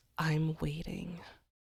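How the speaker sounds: whispered, put-on creature voice. Voicing a creature that still speaks after keeling over dead; whispering monster. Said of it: "It whispers".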